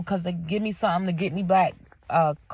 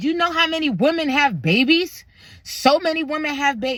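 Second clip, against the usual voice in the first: high-pitched, angry, scolding tone; 7 semitones higher, 4 dB louder than usual. Retelling a nurse who got mad and ordered walking: imitating an angry nurse. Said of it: "she got mad at me".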